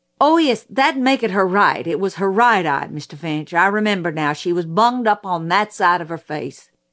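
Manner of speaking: ordinary delivery, nothing marked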